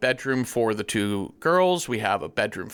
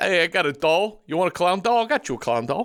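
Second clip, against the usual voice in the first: fake English accent, higher pitch; 7 semitones higher than usual. Acting out a toy seller's lines: put-on English accent. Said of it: "We have such good English accents".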